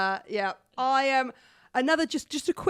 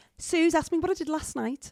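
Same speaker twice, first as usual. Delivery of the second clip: Scouse accent, pitched slightly higher; 5 semitones higher than usual. The speaker shows how they slip into a Liverpudlian accent, Alex Greenwood Scouse accent. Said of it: "I go into it sort of like".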